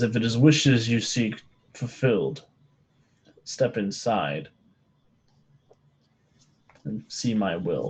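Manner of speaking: deep, low, otherworldly spirit voice. A game master voices the lamp's voice speaking in the players' heads, deep and booming. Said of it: "deep, powerful, booming voice".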